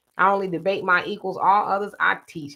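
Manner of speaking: normal talking voice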